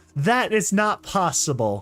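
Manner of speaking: ordinary delivery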